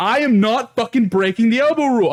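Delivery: put-on high scream. Retelling a beer pong argument, imitating own past screaming. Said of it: "screaming at this point about".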